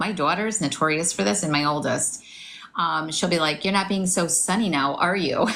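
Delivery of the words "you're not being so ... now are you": plain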